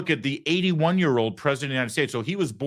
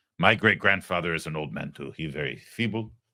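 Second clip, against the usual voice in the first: worst imaginable put-on French accent; 9 semitones lower than usual. Mocking a man explaining why he has to leave early: worst French accent ever. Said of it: "this is the worst French accent".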